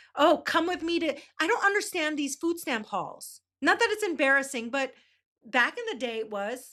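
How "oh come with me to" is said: put-on eager, thrilled, high-pitched voice. Mocking a woman's food stamp haul video: imitating a thrilled voice. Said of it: "the thrill in her voice there".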